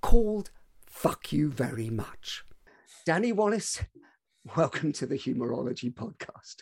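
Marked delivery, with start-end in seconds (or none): 0.0-2.4 breathy whisper, relishing the rude words. Podcast host introducing a guest's book title, relishing the rude words. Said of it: "You relished saying that".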